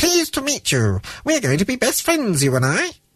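tiny comical voice, very high-pitched. Narrating a story, a voice from the ring greets Alec in a funny little voice. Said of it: "said a funny little voice".

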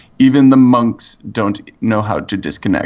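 put-on heavy German accent, laid on thick. Describing a trailer's narrator talking over monks on cell phones; thick german accent. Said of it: "he has this like thick German accent".

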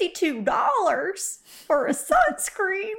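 put-on Texas accent. Host mimics what listeners say, in a Texas accent impression. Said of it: "That was my Texas impression".

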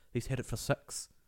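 put-on New Zealand accent. Showing how it differs from an Australian accent, say it in a New Zealand accent. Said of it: "And that's the New Zealand".

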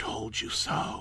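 quiet little voice. Reading a horror story aloud, the dead daughter speaks: small voice. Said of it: "in a small voice I could only just recognize".

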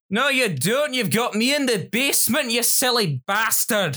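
put-on Scottish accent. The Scottish great-uncle who lives in the basement cuts in: Scottish accent. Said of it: "my Scottish Grunkle who lives in my basement".

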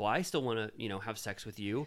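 ordinary delivery

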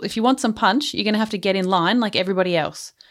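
plain

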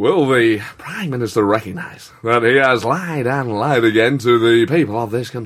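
measured, drawn out, voice dropping away mid-phrase. Asked by the others to do William Hague, doing the impression. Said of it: "I heard you did great William Hague".

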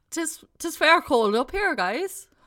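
put-on Irish accent. Told to play an Irishman in space, the speaker answers in an Irish accent. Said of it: "So you be an Irishman in space".

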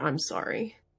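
murmured softly under breath. Voicing a character apologizing to a cold, unresponsive figure: said under her breath. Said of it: "just under her breath, you can hear".

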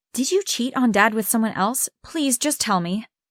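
ordinary talk

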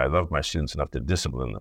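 ordinary talk, nothing marked

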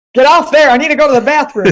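put-on laid-on American accent. Voicing what the dog just said to them, in an American accent. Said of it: "Did you just use an American accent with that? I did".

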